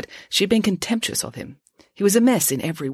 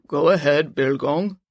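put-on manly voice, as deep as possible. Answering a radio call in the story, in her deepest, most manly voice. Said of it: "said in her deepest, most manly sounding voice".

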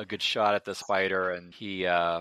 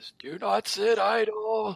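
put-on high, drawn-out, panicky old man wail; 14 semitones higher than usual. A character yells out again, in a loud panicky Krik-Krik old man voice. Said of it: "in this louder, even slightly more panicky old man voice".

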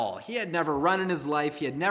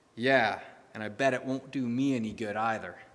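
mumbled under breath, much lower; 5 semitones lower than usual. Retelling a boy walking away from his dad, mumbled under his breath. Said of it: "he mumbled under his breath".

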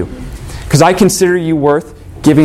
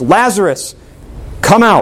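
mild, pitched-up, commanding call; 5 semitones higher than usual. Retelling a story of someone calling out at a tomb: retelling a loud yell. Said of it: "yells out in a loud voice".

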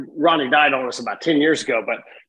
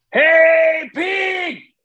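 shrill, high, stretched-out holler, "hey" drawn out; 14 semitones higher, 3 dB louder than usual. Speaker retells his uncle calling out to a pig, imitating Uncle Ronnie yelling. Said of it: "he just yells louder and louder".

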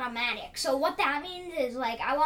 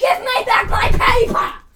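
mock yelling, much louder and higher; 9 semitones higher, 14 dB louder than usual. Retelling how mom yelled when her paper was hidden, retelling mom yelling. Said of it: "she was yelling".

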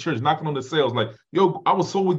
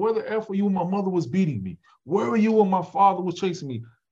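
put-on yelling outburst, pitched high; 5 semitones higher than usual. Recounting going crazy, the speaker reenacts yelling at god. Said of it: "I'm yelling at God".

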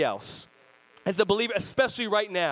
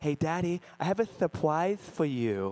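put-on lisping child voice, quieter, slower; 4 semitones lower, 3 dB quieter than usual. A father acting out how his daughter talks to him, with her little lisp. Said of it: "She's got like a little lisp".

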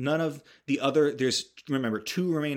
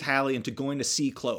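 normal talking voice

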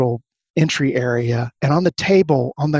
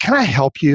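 mock fed-up, exasperated, put-upon, grudging tone. Retelling a receptionist greeting a visitor: imitating an exasperated receptionist. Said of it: "Sort of exasperated".

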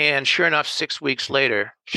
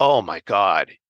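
mock, really scared, frightened gasping exclamation; 6 semitones lower than usual. Retelling his own reaction to the client's warning: imitating his own scared reaction. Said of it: "when you get really scared".

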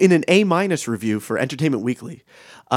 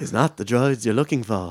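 put-on half-hearted, partial British accent; 3 semitones lower than usual. Showing off a movie-character impression: Ben Kenobi impression. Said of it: "I think I was doing Ben Kenobi".

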